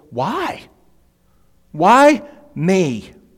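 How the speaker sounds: high, astonished, humbled wondering tone.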